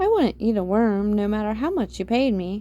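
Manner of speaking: ordinary delivery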